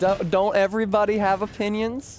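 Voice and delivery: thick, overdone Southern twang, pitched high. Asking the chat a question, slipping into a heavy Southern twang. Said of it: "I did not mean to put so much Southern twang on that".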